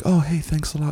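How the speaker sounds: gentle, timid, soft-spoken and slightly odd little voice. Imagining that dude saying thanks a lot, in a soft-spoken, quiet voice. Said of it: "all soft-spoken and weird".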